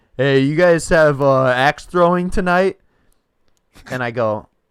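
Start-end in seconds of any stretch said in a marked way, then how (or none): 0.2-2.8 put-on drunk voice, higher and louder. Retelling a phone call from a caller: imitating a drunk caller. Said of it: "so drunk".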